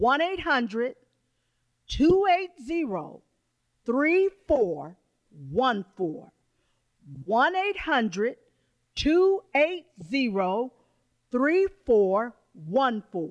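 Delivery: slow, deliberate, spaced-out repetition. Repeating the order phone number for callers a second time, saying it slower. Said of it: "this time I'm going to say it a little bit slower".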